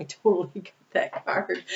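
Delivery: giggly speech, laughing through the words. Admitting the card matched a personal reading, laughing while talking. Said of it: "I'm sorry I'm laughing".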